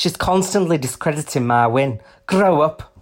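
put-on Scouse accent. Quoting what she said during the online feud: attempted scouse accent. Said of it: "I'll try and do a Scouse accent".

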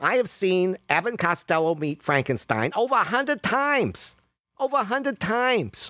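odd little man voice, very high pitched. Retelling a meeting with Doctor Donald A. Reed: imitating Donald A. Reed's voice. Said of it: "who talked like this".

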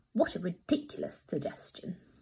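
contemptuous. A little boy dismisses another child's explanation to a group of children; scornful. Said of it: "who said scornfully".

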